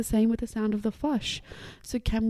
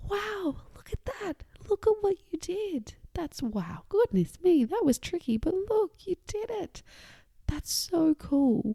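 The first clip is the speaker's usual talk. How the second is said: hushed, quietly excited voice, high and swooping; 8 semitones higher than usual. Demonstrating how to praise someone in the bathroom, excited but quiet. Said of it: "We can be really excited with a quiet voice".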